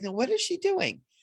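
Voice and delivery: high, incredulous, bewildered wondering. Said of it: "it was like".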